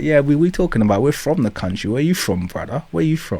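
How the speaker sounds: high-pitched put-on voice. Retelling how people turned the question back on him: imitating someone turning the question back. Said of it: "Be like".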